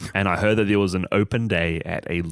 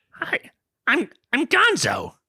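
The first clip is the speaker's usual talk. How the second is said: squeaked out high and sing-song. Taking a turn at Muppets impressions for Patreon listeners, do a Gonzo impression. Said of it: "I want to hear [name]'s Gonzo impression".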